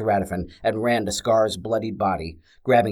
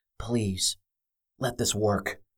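slower, quieter whisper through gritted teeth; 8 dB quieter than usual. Semenek, hearing Scar's footsteps get louder, pushes a button, whispered through gritted teeth. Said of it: "Semenek whispered through gritted teeth".

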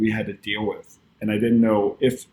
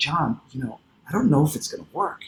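hushed, half-whispered stage whisper; 4 semitones higher, 4 dB quieter than usual. Retelling own words to a producer at a brunch: retelling a half-whisper. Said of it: "kinda whispering".

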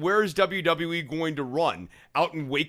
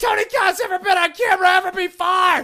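ridiculous, very loud, very high screeching yell; 7 dB louder than usual. Recalling a moment on camera, speaker retells Chris Jericho's line as an extremely loud yell. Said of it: "ridiculous, extremely loud line".

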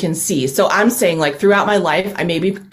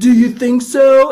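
raised, pitched-up, stupid-sounding voice; 6 semitones higher, 6 dB louder than usual. Quoting Neil's rejoinder in the diner scene, Neil's stupid voice. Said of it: "In a stupid voice".

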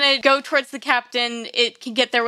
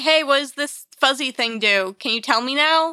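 plain

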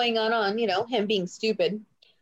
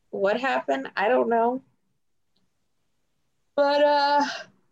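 talking while yawning, higher pitch; 3 semitones higher than usual. Chatting about Randy being missing from TV, yawning while talking. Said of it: "sorry, I'm yawning".

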